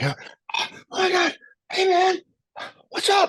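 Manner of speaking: mock thrilled, excited, very high-pitched voice. Retelling how a young fan ran up in greeting: imitating an excited kid. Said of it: "just excited as hell".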